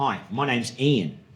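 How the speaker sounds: put-on Australian accent. Retelling meeting a man in the same company uniform, imitating Ian's Australian accent. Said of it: "In an Australian accent".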